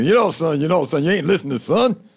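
practiced put-on cartoon character voice. Showing another speaker the Foghorn impression worked on all morning: Foghorn Leghorn voice. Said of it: "I've been working on the Foghorn thing".

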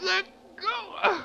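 choked, strangled, very high-pitched gasp. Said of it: "You're choking me".

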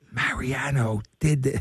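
slow whisper. Retelling a phone call, the speaker quotes the man he called: imitating Bob Mongoluzzi whispering. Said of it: "And he's whispering".

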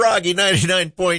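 put-on prim older lady voice. Saying Froggy 99.9 for just a moment in a Church Lady voice. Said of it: "I sound like the church lady there for just a minute".

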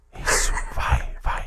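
soft, unvoiced, urgent whisper.

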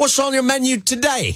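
put-on Australian reporter accent. Retelling a reporter questioning a man who feeds birds, in an Australian accent. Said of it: "Can I do this in an Australian accent?".

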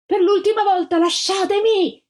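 very high, shrill scream. A girl being lifted onto a van yells at those holding her, screaming. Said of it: "urlò la Gilda".

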